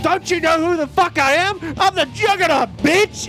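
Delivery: acted-out scream. Describing what happens as the door gets busted in: acting out a scream. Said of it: "I'm going to scream".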